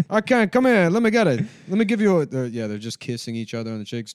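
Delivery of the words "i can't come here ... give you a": booming, very high, very loud put-on Italian voice. Mocking an Italian guy eager to catch the virus: imitating an Italian guy. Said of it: "it was an Italian guy who's like".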